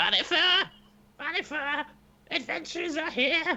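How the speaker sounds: very high, drawn-out shrieking scream. Voicing a chittering skull that warns of the adventurers: screaming skull. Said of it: "it suddenly just screams".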